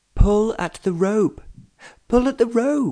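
very high, helpless calling out. Narrator voices an onlooker shouting to a sledder headed for a barn, crying out. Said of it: "cried Miranda".

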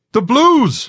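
very high, shrill, shrieking scream. A watchman sees dragons coming toward the colony, screaming. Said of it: "a watchman screamed".

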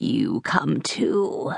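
creaky, grating, rough, rasping creature voice. Narrator voices the bleeding doppelganger holding out a hand to the child, rasping voice. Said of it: "it rasped again".

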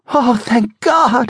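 very high, relieved outcry. A woman learning that Casey is police, crying out in relief. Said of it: "the woman cried in relief".

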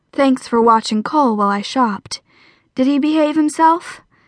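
ordinary delivery

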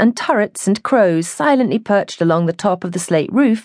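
plain reading voice

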